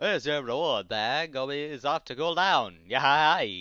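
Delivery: loud, goofy, silly cartoon camel voice. Recapping the Sandy World episode Return of the Camel: camel character voice. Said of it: "you do this voice".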